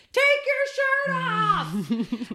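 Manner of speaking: acted very high, drawn-out, full-lunged shout. Retelling shouting at a performer from the crowd: retelling a loud shout. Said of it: "I shouted with all of my lungs".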